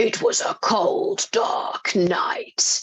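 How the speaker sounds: very high, creaky, rough movie trailer narration. Explaining how a voice becomes recognizable, the speaker demonstrates a movie trailer voiceover voice. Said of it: "that's movie trailer voice".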